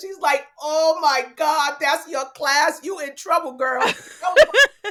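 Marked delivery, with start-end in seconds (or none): 0.6-3.8 put-on New York Puerto Rican accent. Retelling what the school coordinator said after looking at the class list: thick Nuyorican accent. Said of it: "thick, thick Nuyorican accent".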